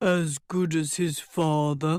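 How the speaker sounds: deep basso voice. A narrator voices a dwarf answering a question, in a basso voice. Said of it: "the dwarf said in a basso voice".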